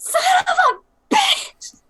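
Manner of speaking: very high-pitched, slow, very drawn-out furious outburst. Voicing Cassandra turning red in a game scene: angry outburst in character. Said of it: "Cassandra turns red for a second. She goes".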